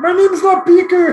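very high, loud, angry, pissed-off voice. Recalling a man the kids nicknamed Beaker: imitating an angry Beaker. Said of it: "he would be so pissed because he's like".

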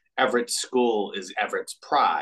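ordinary talk

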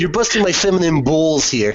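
put-on Boston accent. Imitating a former Italian Boston boss, speaking in a Boston accent. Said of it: "more like a Boston accent".

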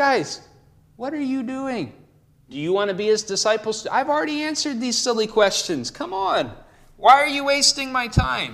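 high sarcastic tone. Acting out the healed man's reply to the Pharisees: acting out a sarcastic retort. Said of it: "He's getting a little sarcastic with them".

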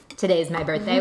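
plain, matter-of-fact tone.

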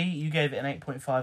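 normal talking voice

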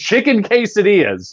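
mock abrupt scream, very high. Recounting what a woman yelled when the room was completely silent, imitating her scream. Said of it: "She just screamed".

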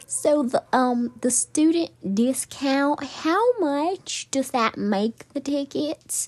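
very high, sweet, cute little Southern drawl. Retelling a friend calling the box office: imitating a friend's cute southern accent. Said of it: "she has a cute little southern accent".

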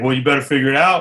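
put-on short-tempered, snappy, curt tone. Retelling what the English teacher said back: imitating a snappy teacher. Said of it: "she kinda got snappy with me".

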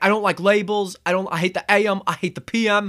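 put-on British accent. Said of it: "my British accent doesn't do him justice".

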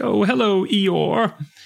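high, put-on shouted yell. Retelling a story where Pooh yells down to Eeyore, Pooh yelling down. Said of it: "Pooh yells down".

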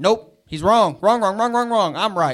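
put-on angry, stubborn, mad refusal. Retelling refusing correction after getting mad: imitating own angry denial. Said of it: "I've been corrected and got mad".

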